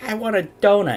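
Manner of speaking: put-on high little baby voice. Retelling a police donut video, quoting the child in it in a little baby's voice. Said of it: "you hear a little baby's voice going".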